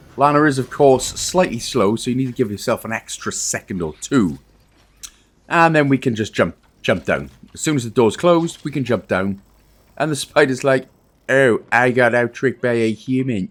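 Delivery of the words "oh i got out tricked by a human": flat, level, robotic cartoon spider voice. Voicing the spider as the players jump down past it, robotic Cartman spider voice. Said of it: "In a robotic Cartman spider voice".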